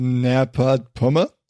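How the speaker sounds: very bad French accent. Saying a title from the show notes aloud: bad French accent. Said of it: "I put an accent on it".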